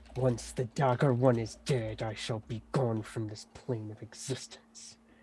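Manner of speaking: soft, hissing voice. Narrating a fight, the speaker voices an enemy hissing back at a player: hissing. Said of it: "He hisses back to you".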